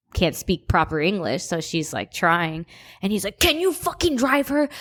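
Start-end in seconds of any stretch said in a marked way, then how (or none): 3.3-4.6 high, enraged, angry man screaming. Retelling how a man screamed at the speaker's aunt, imitating his yell. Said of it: "was just like screaming at her".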